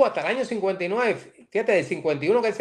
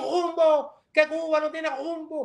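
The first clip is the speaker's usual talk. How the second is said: high, combative, dragged r in rumbo; 9 semitones higher than usual. Recalling a voice his father listened to in his childhood, Chibás impression, dragged rolled R. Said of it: "y arrastrando la erección".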